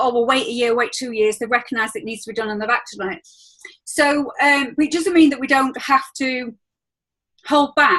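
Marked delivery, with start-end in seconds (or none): none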